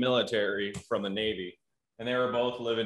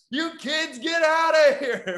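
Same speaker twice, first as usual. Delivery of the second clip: put-on scream, higher and louder; 7 dB louder than usual. Retelling how the kid next door screamed at them: imitating someone screaming. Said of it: "he'd be screaming at us".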